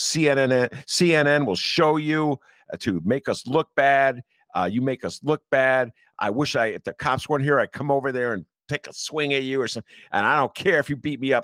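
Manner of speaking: imitated furious man. Retelling a man cussing someone out from across the street: imitating an enraged man. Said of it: "he is enraged".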